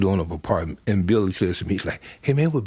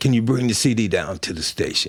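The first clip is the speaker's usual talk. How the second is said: excited, eager, all-excited tone. Retelling a Friday morning call back: imitating someone excited. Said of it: "all excited".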